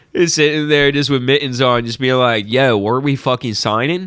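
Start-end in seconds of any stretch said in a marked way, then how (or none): 2.5-4.1 put-on South Philadelphia guy accent. Imagining some dude in an Eagles hat at the signing, speak in a South Philly dude accent. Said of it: "South Philly, just some dude in an Eagles hat".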